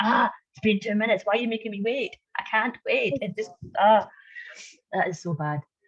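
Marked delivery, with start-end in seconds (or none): 0.0-3.1 mock crazed, exasperated, impatient ranting, pitched up. Retelling getting angry at own children after waiting: imitating own angry outburst. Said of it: "I'll go crazy at them".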